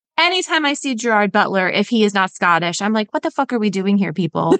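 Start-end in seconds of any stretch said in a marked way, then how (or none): none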